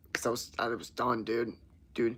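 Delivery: plain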